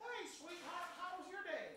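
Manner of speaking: very high, put-on, overly proper and polite voice.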